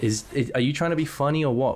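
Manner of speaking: normal talking voice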